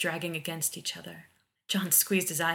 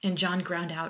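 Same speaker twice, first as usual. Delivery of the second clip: ordinary delivery, nothing marked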